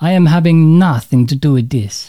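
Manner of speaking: poor, bad put-on Italian accent. Quoting an Italian colleague who wanted nothing to do with it: bad Italian accent, very loud. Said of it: "Apologies for the bad Italian accent".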